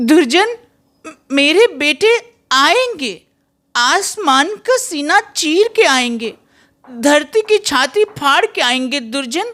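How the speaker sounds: very high woman's voice. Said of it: "राखी गुलजार जी को, जो female character हैं".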